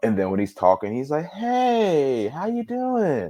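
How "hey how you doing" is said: very high, very slow, sing-song fake-nice voice. Retelling how a man talked to others, imitating someone being very nice. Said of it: "very like nice about it".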